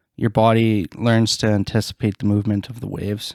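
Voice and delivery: normal talking voice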